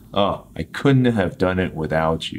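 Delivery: ordinary talk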